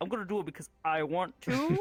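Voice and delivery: normal talking voice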